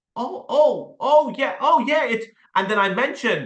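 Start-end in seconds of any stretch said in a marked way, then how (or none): 0.1-2.0 acted, slow, drawn-out, pitched-up dawning recognition. Acting out the prospect suddenly remembering: imitating Wilma remembering. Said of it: "She's like".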